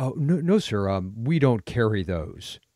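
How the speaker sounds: put-on slow, straight-faced, serious delivery. Retelling a store assistant manager answering a customer: imitating a straight-faced reply. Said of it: "with a straight face".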